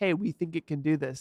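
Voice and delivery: ordinary talk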